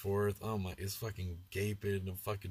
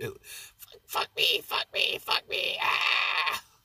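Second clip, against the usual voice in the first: loud, drawn-out, possessed outburst; 9 semitones higher, 9 dB louder than usual. Retelling how she turned into The Exorcist: imitating The Exorcist possession. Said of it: "turned into, like, The Exorcist".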